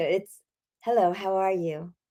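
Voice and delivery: put-on California accent. Retelling how a UCLA professor taught speaking the California way: California accent. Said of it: "If you want to be California".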